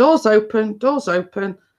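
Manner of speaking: high, mild, repeated calling out. Retelling calling out that the door is open: retelling own shout. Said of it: "So I'm shouting".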